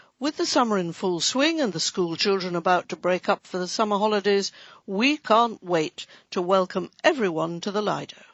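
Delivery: ordinary talk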